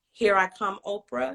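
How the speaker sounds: plain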